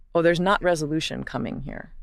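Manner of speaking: ordinary talk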